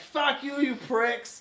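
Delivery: put-on thick Boston accent. Retelling what Giarla yelled at a bar, in Giarla's thick Boston accent. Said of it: "Thick Boston accent".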